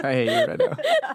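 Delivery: very high, slow, laughing mock protest.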